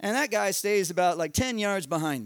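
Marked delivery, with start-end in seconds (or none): none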